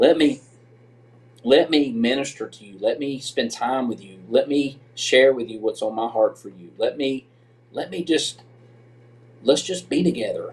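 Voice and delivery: emotion building gradually. Describing time spent with God during a hard transition, getting emotional. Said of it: "I'm about to get emotional".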